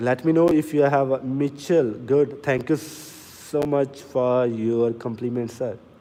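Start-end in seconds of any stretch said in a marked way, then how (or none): 2.4-5.8 very slow, drawn-out speech. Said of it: "Today I try to speak so slowly".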